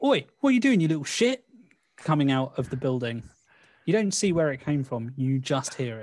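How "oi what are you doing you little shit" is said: loud, very high, fast, sudden, furious angry shout. Game master voicing an unseen character shouting at a fleeing player, shouting. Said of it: "you hear a shout".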